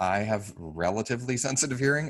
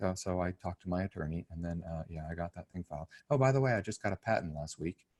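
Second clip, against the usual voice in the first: gentle, soft-spoken, hushed talk; 4 semitones lower, 7 dB quieter than usual. Speaker imitates his engineer buddy's way of talking, soft-spoken. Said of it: "so really soft spoken".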